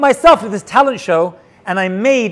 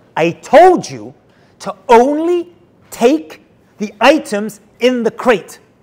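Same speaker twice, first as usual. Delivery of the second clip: mock angry, livid, fuming delivery; 3 semitones higher than usual. Retelling friend Ad Hayom coming over to the speaker, imitating furious Ad Hayom. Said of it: "and he's furious".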